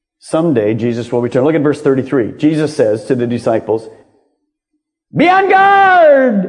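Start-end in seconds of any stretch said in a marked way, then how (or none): 5.1-6.5 abrupt, very high shout with "guard" drawn out. Quoting a verse to listeners to check they are awake, with a sudden shout. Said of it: "I just did that to see if any of you are awake".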